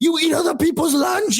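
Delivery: really mad, high-pitched, angry scolding. Retelling a movie scene about a kid eating lunches: imitating Arnold Schwarzenegger, angry. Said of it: "because he's so mad".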